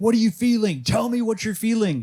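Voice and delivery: shrill, insistent, very high, loud yelling. Retelling how their teacher yelled questions at a man, retelling a teacher's yelling. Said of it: "he's like yelling at him".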